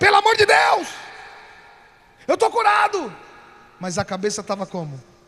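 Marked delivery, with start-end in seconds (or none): 0.0-3.1 acted-out shout, pitched very high. Retelling insisting to the wife of being healed: retelling own shout. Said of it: "Aí eu tive que gritar".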